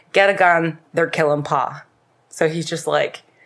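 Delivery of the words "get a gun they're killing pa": ordinary talk, nothing marked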